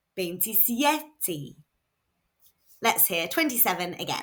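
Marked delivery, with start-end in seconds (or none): 0.2-1.6 veintisiete with stress on second-to-last syllable sie. In a Spanish lesson, the speaker models twenty-seven with stress on veintisiete's second-to-last syllable. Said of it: "the stress goes on the second to last syllable".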